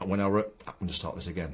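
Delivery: normal talking voice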